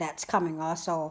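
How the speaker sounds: ordinary talk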